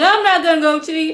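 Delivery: mock bursting into tears. Retelling how she reacted to his cheating: imitating someone bursting out crying. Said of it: "just bust out crying like".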